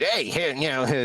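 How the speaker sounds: high-energy skeleton voice. Showing the voice they always do for Skelly: higher-energy Skelly voice. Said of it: "Skelly's higher energy, so it's it has to come up a little bit".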